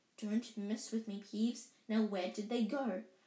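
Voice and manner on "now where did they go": plain reading voice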